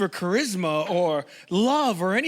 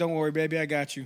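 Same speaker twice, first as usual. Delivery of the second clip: mock sweet, gentle, reassuring tone; 3 semitones lower, 3 dB quieter than usual. Joking about a man soothing his partner: mock-quoting him comforting her. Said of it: "he's like".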